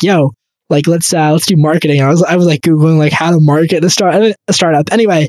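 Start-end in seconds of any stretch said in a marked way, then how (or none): none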